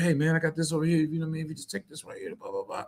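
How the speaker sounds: fast-talking salesman voice. Describing pushy city-slicker salespeople, the speaker acts one out, imitating fast-talking salesman. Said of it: "And they talking so fast".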